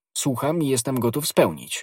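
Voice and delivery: ordinary delivery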